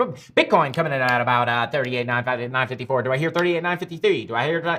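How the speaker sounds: rapid, fast-talking auctioneer-style patter. Trader going over a Bitcoin chart for viewers, in a fast auctioneer voice. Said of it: "I sound like I'm auctioning off Bitcoin here".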